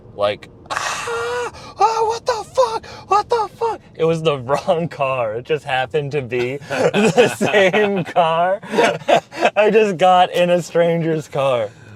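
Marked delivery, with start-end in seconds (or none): 0.7-3.8 very high, startled, panicked scream. Retelling how a stranger reacted when the speaker got into his car, retelling his screaming. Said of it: "he just starts screaming".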